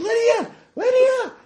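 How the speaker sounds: very high-pitched yell at full volume. Getting into the car after Lydia, a player calls out to her, yelling a name. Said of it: "and I'm just yelling".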